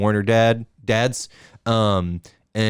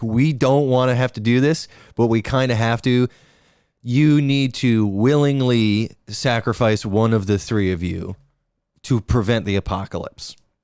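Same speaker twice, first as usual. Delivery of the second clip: ordinary talk, nothing marked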